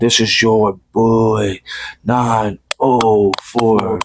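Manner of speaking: very slow, drawn-out, deliberate delivery. The speaker retries his catchphrase, trying it a little slower. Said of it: "say it a little slower".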